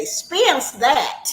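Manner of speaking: Southern drawl with stretched-out vowels. Saying a phrase the way daddy used to say it: imitating daddy's Southern drawl. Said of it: "I'm gonna say it like my daddy used to say".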